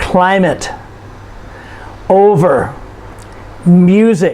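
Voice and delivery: leaned-on first syllables of climate, over, music. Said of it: "you notice we stress the first syllable".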